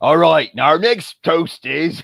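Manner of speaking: high, loud, belted pirate voice. Standing up to give a toast on talk like a pirate day, [name]'s pirate voice. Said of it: "I couldn't get out of [name]'s voice".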